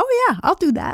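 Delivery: very high, piping, high-pitched voice. Retelling agreeing to a decision they disagreed with: very high-pitched voice. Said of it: "my very high-pitched tone, my high-pitched voice".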